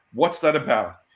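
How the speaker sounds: ordinary delivery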